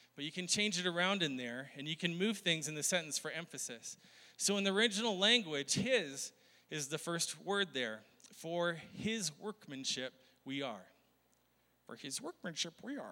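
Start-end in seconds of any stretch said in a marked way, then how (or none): 11.9-13.1 very quiet, badly done sage voice. Showing the word order of the original language with a very bad Yoda impression. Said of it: "That's my Yoda impression".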